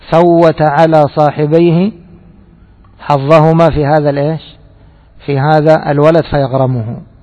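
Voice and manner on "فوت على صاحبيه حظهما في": usual speaking voice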